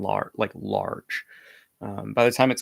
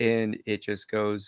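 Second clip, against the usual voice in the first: ordinary talk, nothing marked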